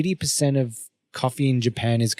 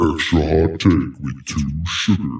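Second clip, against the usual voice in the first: very deep, low put-on voice; 8 semitones lower than usual. Pitching a way to deliver the order line, in a deep voice. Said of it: "cut to me with a deep voice going".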